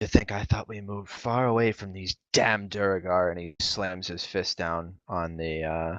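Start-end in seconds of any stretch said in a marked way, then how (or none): 0.0-3.3 put-on frustrated character voice, faster. Narrator voices Barmrick answering Dothra at the bar: frustrated Barmrick voice. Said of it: "clearly frustrated".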